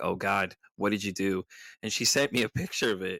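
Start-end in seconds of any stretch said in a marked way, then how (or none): 0.0-1.4 put-on panicked voice. Retelling his reaction to his wife rearranging his room: imitating own panic. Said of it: "And I started panicking".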